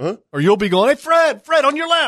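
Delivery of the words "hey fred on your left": put-on very high, carrying holler. Describing birding with others, calling a warning to a companion, imitating someone hollering. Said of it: "so you're hollering to try to communicate".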